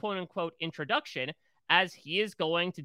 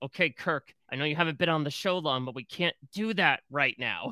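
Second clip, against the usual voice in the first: mock talking through gritted, clenched teeth. Speaker imagining someone warning Kirk on the show: mock talking through gritted teeth. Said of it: "talking through gritted teeth".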